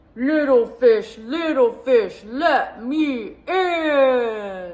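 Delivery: booming, animated, very loud storybook shark voice. Telling a story where the shark knocks at the door: big bad shark voice. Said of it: "the big bad shark came knocking at the door".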